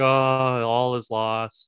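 very slow, complaining, whiny, woe-is-me droid moan. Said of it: "really like a woe is me complaining".

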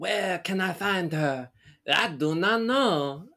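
put-on theatrical delivery. Retelling a kid's audition scene: imitating a kid's French play monologue. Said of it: "does a monologue and he's just like".

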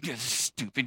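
very soft, low angry grumble, simmering under the surface. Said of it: "so angry you're just over there silently doing the dishes".

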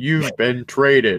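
flat automated machine voice. Retelling how a player got a call saying he was traded, in an automated voice. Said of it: "some automated number or automated voice".

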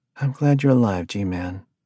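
gentle, soft tone, softly spoken. Resting her head on his shoulder, she speaks to him in a soft tone. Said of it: "she said in a soft tone".

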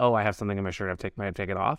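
flat deadpan delivery. Showing how a line would sound said another way, deadpan. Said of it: "if you said it in, like, deadpan".

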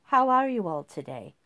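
rote, business-like, on autopilot, by the book. A stunned woman greets a group as if nothing had happened, rote and business-like. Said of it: "in an absolutely rote, business-like voice".

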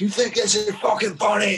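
furious, unhinged, high-pitched raging voice. Retelling a story from one night, imitating Randy Garvey losing it. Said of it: "Randy Garvey was losing his shit".

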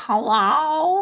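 funny voice with "hello" drawn out long. Showing how they greet people when playing video games: funny Doctor Seeker voice. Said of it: "sound like Doctor Seeker".

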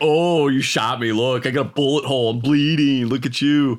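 mock tough taunting. Retelling how a shot man spoke to the shooter, acting out a hardcore taunt. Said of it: "makes it sound like this dude is hardcore".

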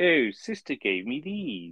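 fake, pseudo-posh put-on accent. Mocking how a doctor talks in an 80s TV programme, in a fake posh accent. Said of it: "really pseudo fake posh accent".

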